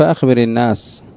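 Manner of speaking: ordinary talk, nothing marked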